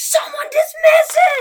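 high shrieking scream, in character. Calling out in character again in a tabletop game: screaming in character. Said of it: "I scream".

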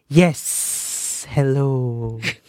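sibilant snake voice. Imitating how the snake head speaks in a snake voice. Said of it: "the snake's just like".

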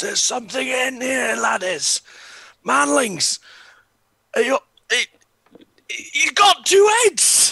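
very loud, very high, rising top-of-the-lungs bellow. Voicing a character who finds a two-headed man behind a door: shouting at the top of lungs. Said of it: "I will shout at the top of my lungs".

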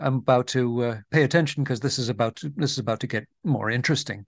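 plain

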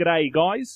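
best-effort put-on Australian accent. Podcast host reading a listener question from western australia: attempted aussie accent. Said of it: "that's my best Aussie".

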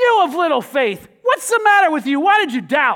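harsh, booming, loud scolding tone. A speaker shows how some churches read the words to Peter: harsh scolding reading. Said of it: "You can hear those words like this".

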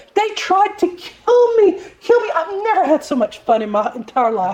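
put-on high, posh South African English accent. Recalling a woman who loved a boat ride, imitating Shoshana's South African Queen's English. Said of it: "She said it in her Queen's English of South Africa".

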